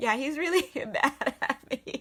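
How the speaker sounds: slow speech, laughing all the way through.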